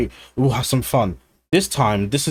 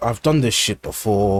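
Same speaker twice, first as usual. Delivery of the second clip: put-on tired voice, lower; 4 semitones lower than usual. Describing how the Doctor comes across as tired: imitating the Doctor sounding tired. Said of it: "tired is like".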